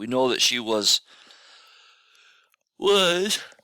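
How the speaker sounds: speaking through a yawn. Explaining something to the guys, the speaker is yawning while talking. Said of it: "excuse me, guys, I'm yawning".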